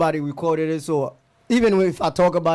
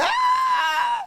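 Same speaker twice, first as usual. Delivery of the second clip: many voices screaming together. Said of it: "They were screaming".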